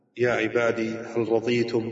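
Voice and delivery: ordinary talk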